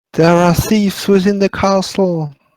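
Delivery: high, screamed, helpless damsel-in-distress cry. A player in a game screams out as their character in a damsel in distress voice. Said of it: "I scream out in my most damsel in distress voice".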